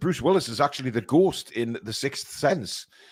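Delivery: ordinary delivery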